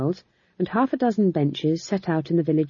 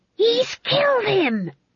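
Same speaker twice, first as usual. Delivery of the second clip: very high, enraged, furious hissing outburst. An enraged woman watching a play speaks to her colleague, hissed. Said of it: "she hissed".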